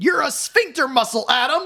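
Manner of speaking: shrill, very high-pitched, loud yell. Recounting the best line of a movie to the other speaker: retelling Jamie Lee Curtis yelling. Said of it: "And she just yells".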